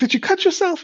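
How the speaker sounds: acted-out upset, very high, emotional voice. Retelling how Mom reacted to the wrapped finger: imitating emotional mom. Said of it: "kinda emotional".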